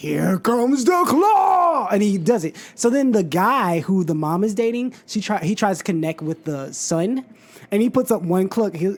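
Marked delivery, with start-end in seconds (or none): 0.0-1.9 playful, high, very drawn-out "claw", slow. Quoting a movie scene where Jim Carrey plays with his son: Jim Carrey as the claw. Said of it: "And then he's like".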